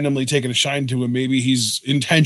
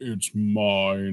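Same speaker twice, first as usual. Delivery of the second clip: really deep, drawn-out, demonic-sounding voice; 5 semitones lower, 7 dB quieter than usual. Retelling how someone said his line: imitating a deep demonic voice. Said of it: "this really deep".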